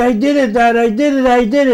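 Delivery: put-on, high, overjoyed, triumphant, excited screaming. Retelling a son's late-night phone call: imitating his son screaming excitedly. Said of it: "And he's screaming".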